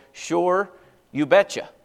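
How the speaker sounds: put-on central Wisconsin, Upper Midwest accent. Showing how people born in central Wisconsin agree: central Wisconsin accent. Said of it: "when you talk like this".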